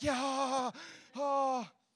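put-on effortful huffing and panting. Retelling setting furniture down with others: imitating panting after lifting. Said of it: "joining with them".

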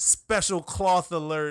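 booming, very loud, slurred delivery. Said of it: "[name], his radio show".

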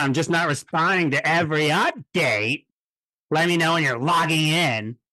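mock-nasty reading. A speaker reads out another person's message in a mock-nasty reading. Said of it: "how nasty he reads my voice".

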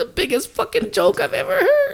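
very high, swooping voice, squealed through laughter. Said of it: "my Bert Kreischer voice".

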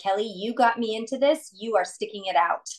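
ordinary delivery

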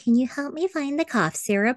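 high, mocking, put-on clueless dim-witted voice. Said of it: "It's like".

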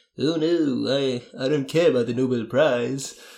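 put-on slow, unhurried old man voice. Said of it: "Very, very good [name] [name] impression there".

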